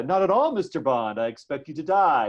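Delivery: smarmy, falsely friendly, sinister villain voice. Explaining that movie villains act friendly but are evil, imitating a mock-smarmy villain. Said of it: "they act friendly in this kind of smarmy way".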